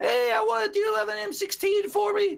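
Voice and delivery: put-on six-year-old voice. Retelling a stream where a man pretended to be six: imitating a man faking a child's voice. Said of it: "a dude pretending to be six years old".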